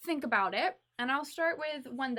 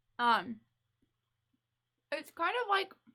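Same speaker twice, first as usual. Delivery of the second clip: speech muffled by a full mouth, slightly high; 6 semitones higher than usual. Speaker tasting food, mid-bite, keeps talking with mouth full. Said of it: "sorry, I'm talking with my mouth full".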